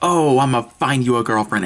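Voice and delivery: acted, loud, obnoxious blurted line. Retelling what a guy said in class: imitating someone saying it loudly. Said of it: "he said it really loud".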